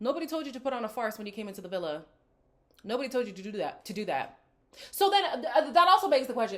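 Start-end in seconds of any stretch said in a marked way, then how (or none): 4.9-6.6 tripping over words, stuttering and stammering. Arguing with someone from the villa, stuttering. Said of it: "now I'm stuttering".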